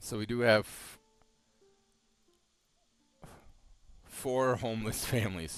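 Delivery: talking through laughter. Noting four homeless families in the game, laughing while talking. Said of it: "I'm sorry for laughing".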